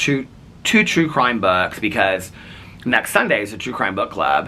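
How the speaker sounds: ordinary talk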